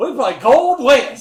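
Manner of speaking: put-on cowboy-style Western accent, very loud and high. Teasing another speaker by repeating his intro: imitating a western accent. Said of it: "He's like".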